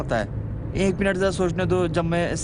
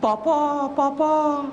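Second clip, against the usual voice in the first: put-on very high, babbling little-baby voice; 9 semitones higher than usual. Imagining the baby's first spoken word: imitating a baby's first words. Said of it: "जब बोले तो सबसे पहले पापा बोले".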